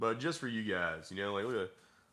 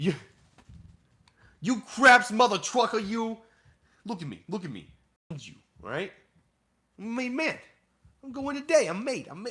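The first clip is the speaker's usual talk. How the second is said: shrill, squeaky-high, loud put-on voice; 11 semitones higher, 5 dB louder than usual. Joking at the craps table as a made man: Joe Pesci impression. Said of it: "Joe Pesci".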